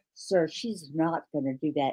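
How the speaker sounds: quiet, soft hushed half-whisper, close to the ear. Retelling a remark half-whispered in a teacher's ear: imitating a half-whisper. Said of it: "I whispered in his ear".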